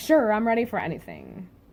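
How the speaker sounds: ordinary delivery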